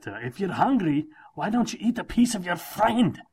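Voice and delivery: put-on loud Scottish ogre accent. Quoting lines from the movie to the other person, doing Shrek voice. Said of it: "I had to do the accent for Shrek".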